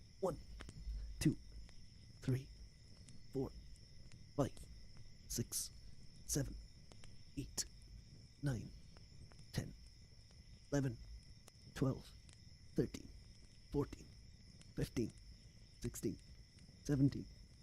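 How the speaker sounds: airy, breathy whispered ASMR-style counting voice. Streamer counting push-ups for chat at the end of stream, breathy counting. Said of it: "You get breathy counting A S M R".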